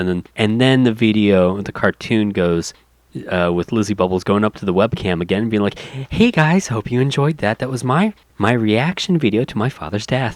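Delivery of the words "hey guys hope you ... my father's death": put-on bubbly vlogger voice, higher. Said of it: "bubbly vlogger".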